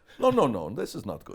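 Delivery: put-on Dutch accent. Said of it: "in his Dutch accent".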